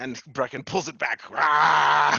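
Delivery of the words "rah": mock battle yell, louder. Narrating a fight as Brecken pulls the sword back, Brecken war cry. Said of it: "my best impression of a Brecken war cry".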